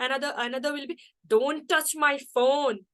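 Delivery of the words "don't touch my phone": slow, forceful, aggressive, commanding tone. Showing how a command sounds, the speaker gives an example in an aggressive commanding voice. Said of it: "like this".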